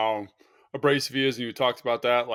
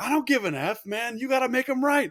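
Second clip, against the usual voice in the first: put-on, very high, barking coach yell; 12 semitones higher than usual. Retelling a college practice where the listener got yelled at: imitating someone yelling. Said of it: "he yelled at you like I've never seen anybody get yelled at".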